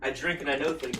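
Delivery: ordinary talk, nothing marked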